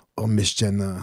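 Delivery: put-on Israeli-accented speech. Improvising a bit with friends, in a put-on Israeli accent. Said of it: "What I do in Israeli?".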